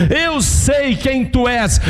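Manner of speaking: frightening, high, drawn-out demonic shout. Retelling a Bible scene where the demons' spokesman speaks, acting out a demon shouting. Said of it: "E ele fala isso gritando".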